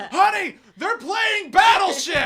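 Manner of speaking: very high, very loud, sarcastic excited delight. Retelling hearing Chewie call out from the other room: imitating Chewie's sarcastic excitement. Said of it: "I was doing that sarcastically".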